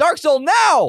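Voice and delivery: loud, high-pitched yelling. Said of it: "and then I yell".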